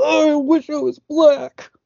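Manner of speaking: very high-pitched, furious, angry cry. Acting out the way he does it, totally authentic and not playing it up, mock-angry. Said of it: "He's just angrily".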